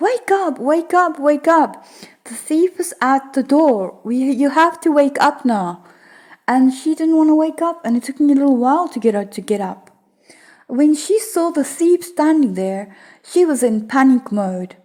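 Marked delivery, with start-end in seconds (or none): 0.0-5.8 insistent, urgent, put-on screaming call. Retelling screaming at a sister to wake up as a thief approaches: imitating screaming to wake someone. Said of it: "I'm screaming out to my sister now to wake up".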